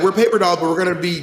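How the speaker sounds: normal talking voice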